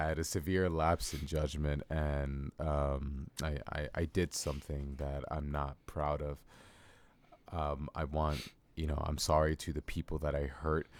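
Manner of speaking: very soft, scripted-sounding, rehearsed murmur. Parodying a YouTuber caught cheating: mock YouTuber apology voice. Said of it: "I've been practicing my YouTuber apology".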